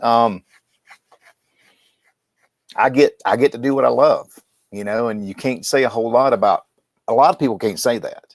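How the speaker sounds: voice catching, choked up with feeling. Answering what he does outside of work, choked up with emotion. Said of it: "I get a little choked up".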